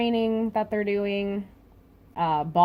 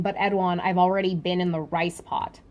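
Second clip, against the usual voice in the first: usual speaking voice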